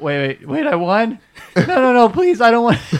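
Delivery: very loud, very high, frantic pleading, voice cracking. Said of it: "His voice keeps cracking".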